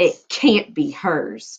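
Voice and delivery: sneering scorn, very slow and drawn out. Cinderella's ugly sisters sneer as a shy figure steps forward: sneering. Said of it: "sneered the sisters".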